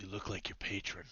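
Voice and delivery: whispered delivery. Voicing a spellcaster who speaks to a withered foe: whispering. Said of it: "he whispers to Robes".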